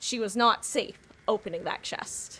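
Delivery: voice-over narrator voice, narration style. A gamer comments on her own play by switching to a narrator voice. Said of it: "Narrator's voice".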